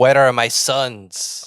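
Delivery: very slow, drawn-out delivery. Joking about a superhero scene, doing a Scarlet Witch impression. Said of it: "my Scarlet, Scarlet Witch impression".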